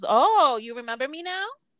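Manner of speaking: high, loud, irked, annoyed, pointed jab. Retelling how mom reacts to a missed call: imitating her mom. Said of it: "She goes".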